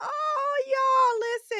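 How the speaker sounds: high-pitched, choked up, near tears. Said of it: "I'm not gonna cry right now".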